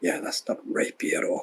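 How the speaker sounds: very quiet, breathy, barely voiced whisper. Retelling watching two people, whispering an aside to another person, retelling a whispered aside. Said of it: "I'm whispering to Sean".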